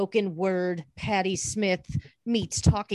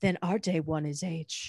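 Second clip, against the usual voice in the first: flat, unchanging inflection; 4 dB quieter than usual. Imitating how he would always say it, in a flat unchanging monotone. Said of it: "he would say it like that, and in this tone. He would never change the inflection of his voice".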